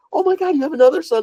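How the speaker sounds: mock very high, thrilled, bubbly, excited gush. Retelling a movie scene where she learns of his son: imitating an excited Mary Steenburgen. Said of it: "she's all excited and she's like".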